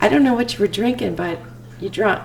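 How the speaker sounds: ordinary delivery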